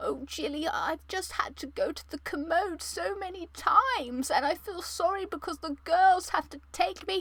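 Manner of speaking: put-on soft, high, old grandma voice. Imitating her grandmother in hospital, in a grandma voice. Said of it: "I'll give you a little taste of the grandma voice".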